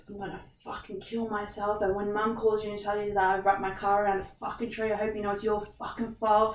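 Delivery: put-on angry outburst. Retelling an ex-partner's angry phone threat: imitating an angry threat. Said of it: "just got so angry".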